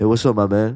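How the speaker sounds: put-on, half-asleep, sleepy voice. Retelling a phone call answered by someone who sounded asleep: imitating a sleepy voice. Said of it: "It sounded like he was asleep".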